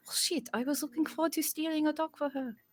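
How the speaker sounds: quiet, muttered character voice. Imagining what a character would say, muttering under her breath. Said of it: "she'll just say under her breath".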